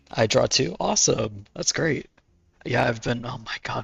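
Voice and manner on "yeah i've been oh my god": voice failing and giving out. Breaking off mid-sentence and apologizing: voice failing. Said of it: "my voice is failing me".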